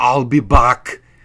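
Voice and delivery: loud, booming action-movie tough-guy voice. Quoting terrible movie lines: Arnold Schwarzenegger impression. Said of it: "he delivered all these terrible lines".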